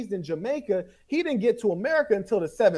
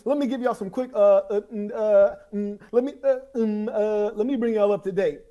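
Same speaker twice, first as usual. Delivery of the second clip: mock stuttering, put-on stammering. Mocking another speaker's halting delivery: imitating someone stuttering.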